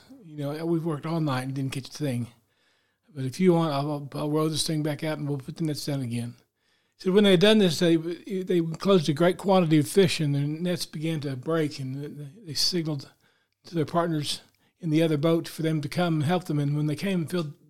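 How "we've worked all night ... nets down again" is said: ordinary delivery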